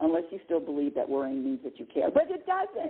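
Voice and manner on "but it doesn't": very high-pitched shouting yell. Speaker lecturing the listener directly, apologizing for raising their voice, yelling. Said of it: "Sorry to yell".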